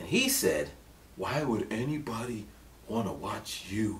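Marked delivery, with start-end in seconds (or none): 1.2-4.0 condescending, disbelieving, talking-down tone. Retelling a venture capitalist's question after a presentation: imitating a condescending tone. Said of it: "he said it like that, in a condescending type of way".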